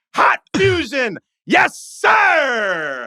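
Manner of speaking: excited sportscaster voice. Imitating a sportscaster calling a movie scene like a game: Gus Johnson play-by-play call. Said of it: "I would like to hear Gus Johnson calling".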